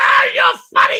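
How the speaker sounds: put-on hysterical bawling and laughing, very high shout. Telling a plane story, imitating the guy hysterically bawling and laughing. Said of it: "the guy starts bawling and laughing. Hysterical".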